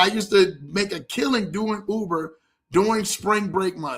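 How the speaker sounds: plain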